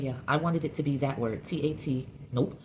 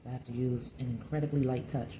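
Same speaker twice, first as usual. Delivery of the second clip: half-whispered, deep in concentration; 3 semitones lower, 4 dB quieter than usual. Speaker about to refine a temperamental spot: half-whispering. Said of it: "why I'm whispering while I'm saying incredibly light touch".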